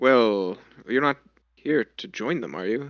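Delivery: said in a hushed voice. A character questions the visiting group, in a hushed tone. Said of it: "He sort of says this in like a hushed tone".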